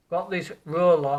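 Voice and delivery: slow, careful delivery. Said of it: "I'll have to say this slowly".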